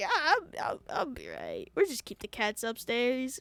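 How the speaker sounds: acted blubbering through tears, swooping pitch. Retelling a friend answering his mom, imitating Raul crying. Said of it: "he's just crying".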